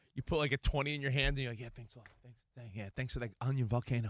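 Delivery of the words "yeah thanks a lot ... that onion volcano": put-on East Coast Italian accent, guy voice. Talking about handing over a twenty, the speaker demos an East Coast Italian guy voice. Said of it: "be like East Coast Italian guy".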